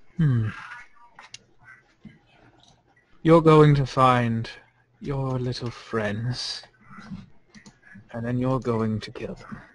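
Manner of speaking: displeased, unhappy character voice. Voicing a character who backs up and points at the player: unhappy character voice. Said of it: "grunts under her breath, uh, and doesn't look happy".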